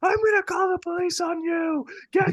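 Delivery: furious yelling, pitched way up. Retelling a woman trying to get into his house, retelling his own yelling. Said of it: "I go off on her".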